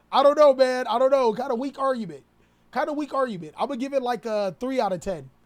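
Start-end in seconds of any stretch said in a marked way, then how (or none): none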